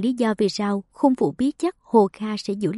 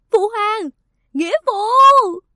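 very high, drawn-out, desperate, despairing scream; 12 semitones higher, 7 dB louder than usual. Khung Dực cries out to his adoptive father; despairing scream. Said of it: "Khung Dực tuyệt vọng gào lên".

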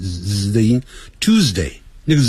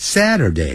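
Saturday said with pitch falling high to low; 3 semitones lower than usual. Going through the days of the week, saying saturday with falling pitch on saturday. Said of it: "由高往低这样念".

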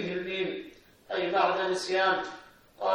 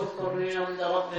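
ordinary talk

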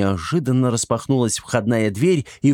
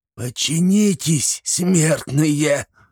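high, hissed, sorcerer-like voice; 5 semitones higher than usual. A sorcerer commands the warriors closing in on him, hissing. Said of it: "прошипел".

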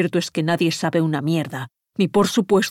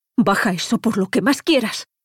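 frightened, scared whimpering voice; 4 semitones higher than usual. Speaking to a man holding a weapon: frightened whimper. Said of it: "gimió asustado".

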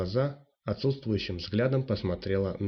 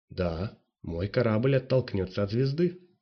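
plain

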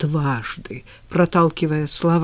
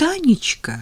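unnaturally gushing, stormy, overdone delight, pitched high; 7 semitones higher than usual. Zhenya answers Tanya's early phone call: unnaturally overjoyed. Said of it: "Неестественно бурно обрадовался Женя".

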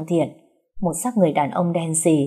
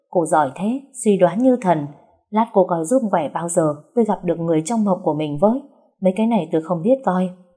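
plain

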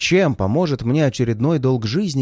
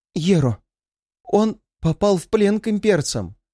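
shaky, quavering, trembling voice, pitched up; 6 semitones higher than usual. A healer tells the narrator that someone has been captured, trembling voice. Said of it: "Дрожащим голосом поведала".

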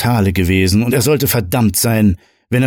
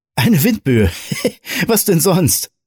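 giggling through it, high like a schoolgirl; 9 semitones higher than usual. A man answers Roger before clapping him on the shoulder, giggling like a schoolgirl. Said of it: "kicherte er wie ein Schulmädchen".

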